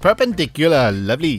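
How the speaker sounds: Welsh-accented voice. Showing how to do a Welsh accent with one word: Welsh accent. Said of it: "it's quite Welsh as well".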